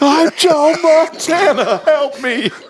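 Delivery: shrill, very high, tearful crying shriek. Retelling yelling over the house in between them, imitating a tearful scream. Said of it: "it was like this tearful scream".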